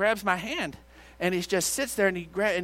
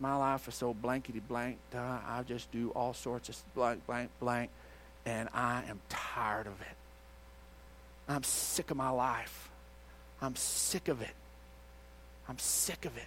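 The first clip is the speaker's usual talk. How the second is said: put-on whispered, breathy, tearful bawling rant; 7 semitones lower, 12 dB quieter than usual. Retelling a man's words as he sat bawling: imitating someone bawling. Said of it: "And he's just bawling".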